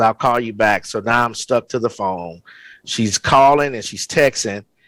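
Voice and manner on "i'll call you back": ordinary talk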